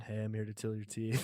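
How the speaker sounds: lifeless, flat, dead monotone drone, low and hushed. Describing a creepy horror character, deliver its line in a dead monotone. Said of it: "that dead monotone".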